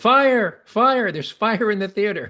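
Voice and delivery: high, loud, alarmed yell.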